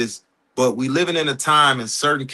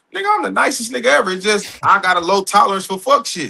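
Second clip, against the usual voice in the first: ordinary talk, nothing marked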